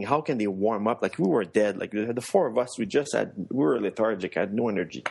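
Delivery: ordinary delivery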